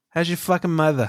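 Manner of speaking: put-on Boston-accented dog voice. Voicing a Boston Terrier demanding kibble from its owner, Boston accent. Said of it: "That's what my Boston Terrier says to me".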